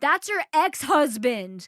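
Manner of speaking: loud, slow screaming from the background. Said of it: "who screams".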